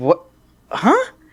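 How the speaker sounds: high, stunned, caught-off-guard disbelief. Retelling their reply to the man's advice: imitating own shocked reaction. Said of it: "I'm in shock".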